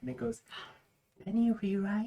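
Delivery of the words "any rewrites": high half-whisper carried to speaking volume. Voicing a magical half-whisper that rolls in like fog: amplified half-whisper. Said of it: "like a whisper amplified to a normal speech".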